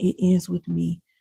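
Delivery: ordinary delivery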